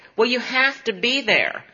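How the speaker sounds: put-on Texan twang. Retelling a man's phone calls about a fruit delivery, in an imitated texas accent. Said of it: "This is all said in a Texas accent".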